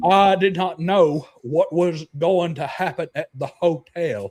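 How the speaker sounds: put-on strong, marked Mississippi accent. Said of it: "That is very much a Mississippi accent".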